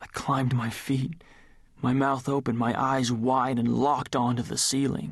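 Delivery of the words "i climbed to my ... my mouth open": usual speaking voice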